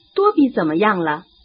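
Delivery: ordinary delivery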